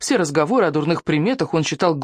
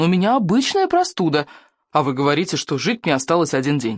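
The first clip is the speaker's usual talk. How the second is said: plain reading voice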